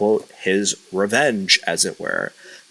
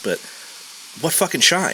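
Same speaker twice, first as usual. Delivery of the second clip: mocking, sarcastic, pitched-up tone; 7 semitones higher than usual. Discussing the wrestler Solo, asking a sarcastic question. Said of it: "I'm being sarcastic when I ask".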